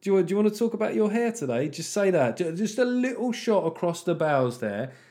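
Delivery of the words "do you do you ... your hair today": high-pitched, teasing jab. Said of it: "just gotta go".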